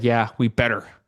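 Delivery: mock stern voice. Host mimicking how a guest just answered, in a mock-stern tone. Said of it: "She just sounded so stern about that".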